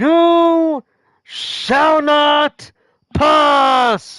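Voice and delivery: dramatic, theatrical delivery. Playing a game and pausing to say the reference properly: dramatic movie-quote delivery. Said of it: "I gotta say it like".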